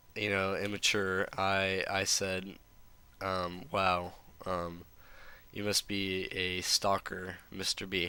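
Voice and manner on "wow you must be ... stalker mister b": usual speaking voice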